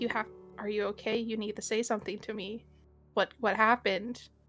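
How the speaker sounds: speaking in a whisper. Voicing a character asking a silent character what happened: whispering. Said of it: "whispering. He's like".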